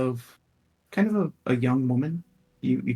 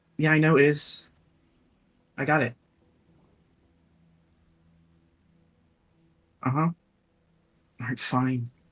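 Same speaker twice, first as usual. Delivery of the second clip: put-on young woman's voice. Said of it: "a younger woman's voice".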